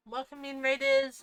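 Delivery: talking with mouth full. Twitch streamer welcoming incoming raiders, talking with mouth full. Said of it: "Sorry, I have a mouthful of food".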